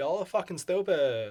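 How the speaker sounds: put-on Californian Valley Girl accent. Calling the listeners stupid in a valley girl voice. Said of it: "I'm calling you stupid in the Valley Girl voice".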